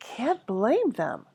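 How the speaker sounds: mild, kindly, gentle, soft-spoken, easy. Reading a story aloud, voicing a calm reply: gentle. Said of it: "said Dumbledore gently".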